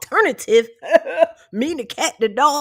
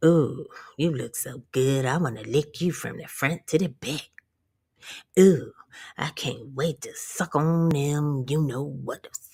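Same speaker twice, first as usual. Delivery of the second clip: mock leering lecherous voice, much lower pitch; 8 semitones lower, 5 dB quieter than usual. Retelling what a man once said to them, imitating a leering man. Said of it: "He was like".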